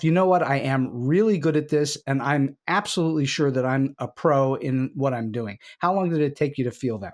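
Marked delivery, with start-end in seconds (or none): none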